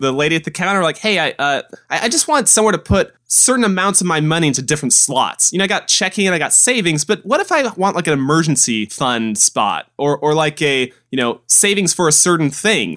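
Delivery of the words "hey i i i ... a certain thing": usual speaking voice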